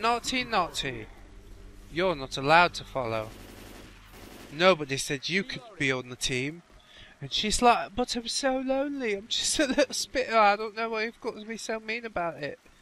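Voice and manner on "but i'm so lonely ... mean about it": horrible, bad put-on English accent. Voicing a Spitter zombie's pleading reply in an English accent. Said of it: "What are you talking in an English accent?".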